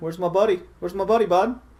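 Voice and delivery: put-on strong Canadian accent. Prompted by another player to say it with a harder Canadian accent. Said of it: "say it with a harder Canadian accent".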